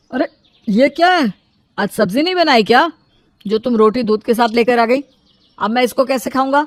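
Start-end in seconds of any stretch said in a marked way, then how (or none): none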